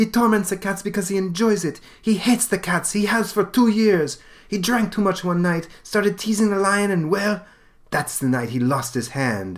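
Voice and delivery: put-on girl's voice with a Russian accent.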